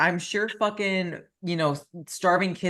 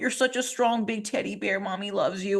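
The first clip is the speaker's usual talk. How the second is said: sweet, fawning, doting motherly coo; 3 semitones higher than usual. Mocking a mom consoling her dieting son online: imitating a doting mom. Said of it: "for your mom to be like".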